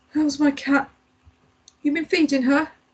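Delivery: high, croaking voice, words forced out. A man with an infection speaks to the visiting narrator, croaking. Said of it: "he croaked".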